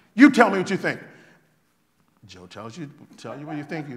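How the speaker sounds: very loud, booming, full-throated heated arguing. Recounting a dinner where someone pressed Anton for his opinion, retelling someone talking loudly.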